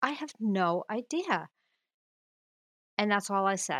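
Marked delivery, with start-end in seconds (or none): 0.0-1.5 acted-out, dismissive brush-off tone. Retelling a reply to a daughter's question: imitating own past shush-off tone. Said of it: "in that tone".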